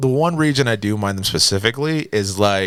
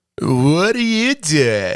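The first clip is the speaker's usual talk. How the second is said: put-on very slow, stretched-out, high Californian accent; 7 semitones higher than usual. Imitating the Californians from SNL: The Californians SNL accent. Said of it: "the Californians from, uh, fucking S N L".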